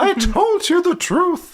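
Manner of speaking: very high, squeaky little cartoon voice. Voicing a book character during a story recap: sounding like Mickey Mouse. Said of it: "Why do you sound like Mickey Mouse?".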